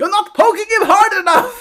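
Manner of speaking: very high, smothered, muffled goblin-like shouting. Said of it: "muffled yelling".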